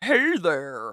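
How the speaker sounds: eerie, unsettling, creepy put-on voice. Wondering about a female character, imitating her with a put-on creepy voice. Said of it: "And her creepy".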